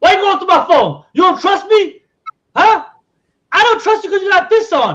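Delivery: very loud accusing tone. Acting out a partner caught on the phone: acting out flipping the blame. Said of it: "You gotta find a way to flip it on them".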